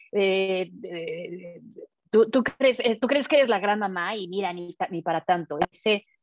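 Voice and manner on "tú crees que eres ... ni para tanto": plain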